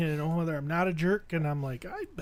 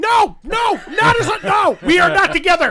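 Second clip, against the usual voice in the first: very high, very loud, stretched, drawn-out scream; 12 semitones higher, 12 dB louder than usual. Retelling how Heidi kept denying they were a couple: imitating someone screaming. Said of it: "Heidi's still screaming".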